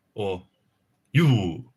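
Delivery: a little Japanese accent. Demonstrating how to pronounce a word, slightly Japanese-sounding. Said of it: "That one sounded a little bit Japanese".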